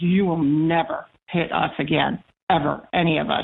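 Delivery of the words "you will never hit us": usual speaking voice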